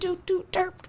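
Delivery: high-pitched beeping button-sound impression.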